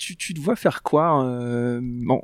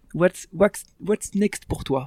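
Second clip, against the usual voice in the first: awful, unconvincing English accent, pitched up; 4 semitones higher than usual. Asking the other speaker what comes next: terrible English accent. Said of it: "je l'ai dit avec un accent affreux".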